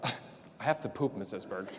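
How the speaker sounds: mock very deep, very soft, matter-of-fact tone. Quoting a student answering her teacher from the bathroom, retelling a matter-of-fact reply. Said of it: "in this very matter-of-fact voice".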